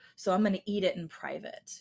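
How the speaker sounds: usual speaking voice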